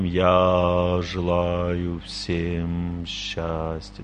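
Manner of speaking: very slow, low, resonant delivery.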